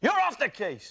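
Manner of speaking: very high, loud, barking boss-like shout. Imitating a film cliché, the shouty police boss. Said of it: "he always goes like this".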